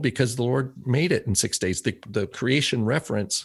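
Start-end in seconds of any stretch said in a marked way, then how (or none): none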